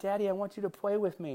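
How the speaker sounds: put-on sweet little-kid voice. A dad retells his kid asking him to play: Watson's cute little kid voice. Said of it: "it's that cute little kid voice".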